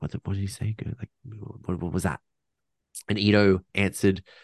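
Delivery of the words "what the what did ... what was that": soft, hushed whispering. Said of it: "were, like, whispering".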